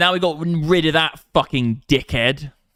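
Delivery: loud, high-pitched hollering shout. A streamer talking to viewers late at night, shouting. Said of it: "I gotta stop shouting".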